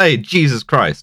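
put-on classic New York street-guy accent. Retelling a movie scene where a truck driver yells: imitating a New York guy. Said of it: "a classic New York guy in it who just goes".

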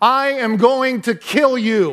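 top-of-the-lungs scream, high and very drawn out. Retelling a roller coaster heading into a corkscrew: imitating own full-lung scream. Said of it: "I screamed at the top of my lungs".

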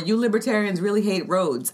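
ordinary talk

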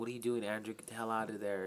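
ordinary talk

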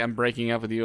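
ordinary delivery

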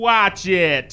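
loud, annoyed, angry shout. Voicing a station worker as a runner dodges past: angry shout. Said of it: "One angrily shouts at you".

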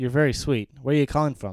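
plain

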